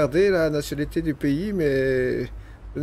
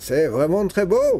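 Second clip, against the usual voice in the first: put-on French spoken with a thick, heavy German accent. Telling a story, the speaker quotes a pipe-smoking man at a railing: thick German accent. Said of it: "avec un accent am- allemand à couper au couteau".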